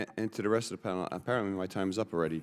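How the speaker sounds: rushed speech at double speed. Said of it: "You talk fast".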